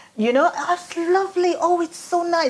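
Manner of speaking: put-on seven-year-old child voice. Recalling herself as a child admiring the garden, seven-year-old child voice. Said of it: "with my 7-year-old voice".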